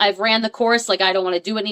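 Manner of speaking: ordinary talk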